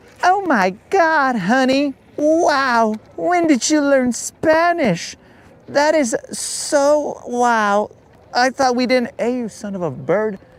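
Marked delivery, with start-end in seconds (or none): 0.3-9.1 slow, gushing, put-on girly voice. Imagining a wife praising her husband: imitating a wife's girl voice. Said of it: "I don't do that many girl voices".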